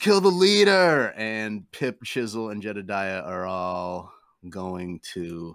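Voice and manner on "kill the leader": high screamed battle cry. Voicing a character urging allies to attack: screaming a battle order. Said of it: "Jedediah screams".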